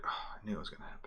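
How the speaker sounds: breathy sigh, said in a whisper. Retelling a man who'd sigh when others got hurt, imitating a sigh. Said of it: "he'd sigh when other people got hurt".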